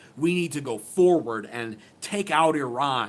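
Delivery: ordinary delivery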